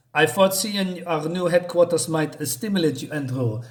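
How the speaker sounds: put-on, fake French accent. Reading a comic character's line aloud: fake French accent. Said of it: "my fake French answer, ans-, accent".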